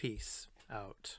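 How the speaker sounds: soft, quiet whisper.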